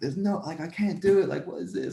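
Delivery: mock, high, worn-out exhausted yelling. Retelling an exhausting run at practice, the speaker reenacts screaming at the coach. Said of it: "I'm like screaming at the coach".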